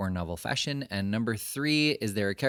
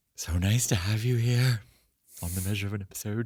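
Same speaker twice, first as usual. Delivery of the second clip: put-on cartoon horror voice. Welcoming the listener to the show in a cartoon Vincent Price voice. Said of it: "It's kind of a Vincent Price".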